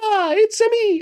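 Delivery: goofy cartoon voice, very high and drawn out. Goofing around doing stupid voices with a friend: Mario voice. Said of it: "I'm there doing fucking Mario".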